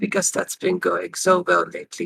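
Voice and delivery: muttering under breath. Character remarking after someone stomps off, muttering under breath. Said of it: "She mutters under her breath".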